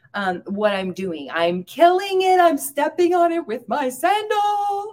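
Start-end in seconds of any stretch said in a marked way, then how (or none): 1.3-5.0 mock very high, loud, frantic, panicked shriek. Retelling own words screamed out loud during a scare: imitating own panicked high-pitched scream. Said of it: "I have to say out loud or scream out loud".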